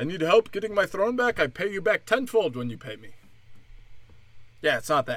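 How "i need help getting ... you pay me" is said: fake, put-on Indian English accent. Mocking a Nigerian prince scam, the speaker does a put-on Indian accent. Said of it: "I'm doing Indian".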